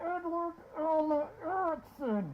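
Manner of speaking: put-on, high, angry words forced through clenched teeth. Act out your mom saying your full name, imitating anger through gritted teeth. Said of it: "she would get angry... She would grit her teeth, and she would say".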